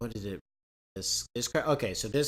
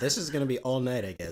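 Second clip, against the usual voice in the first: ordinary talk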